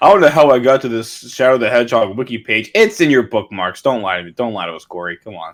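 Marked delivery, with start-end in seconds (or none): none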